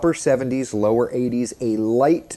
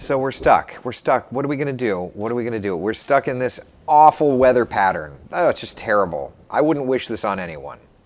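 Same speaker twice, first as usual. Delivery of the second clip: usual speaking voice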